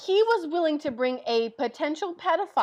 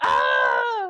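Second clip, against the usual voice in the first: loud, raging scream. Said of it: "She, like, screams and goes".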